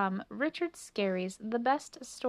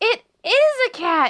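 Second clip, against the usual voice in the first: shrill, very high, slow, drawn-out, full-volume cry; 11 semitones higher, 13 dB louder than usual. Melissa cries out to the others as she spots a cat, crying out. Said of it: "cried Melissa".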